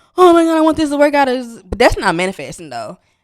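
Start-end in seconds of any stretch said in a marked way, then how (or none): 0.2-1.3 high, loud, rushed, anxious, stressed-out outburst. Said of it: "I get stressed out and I get anxious".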